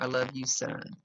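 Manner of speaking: plain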